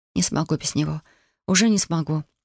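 plain

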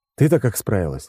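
ordinary delivery

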